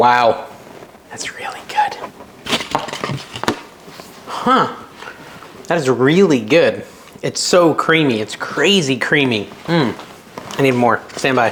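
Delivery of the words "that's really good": whisper, soft and high-pitched, sounding excited. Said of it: "See, I'm whispering again".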